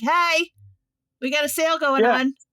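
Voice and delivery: high store-announcement voice, calling out. Imagining a store that tracks the phone calling out: speaking as Walmart. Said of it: "have Walmart being like".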